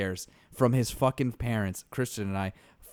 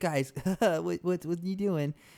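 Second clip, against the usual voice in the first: high, flustered, stammering, bewildered voice; 7 semitones higher than usual. Retelling a friend's reaction while being killed in a game: imitating Aaron. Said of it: "And Aaron's like".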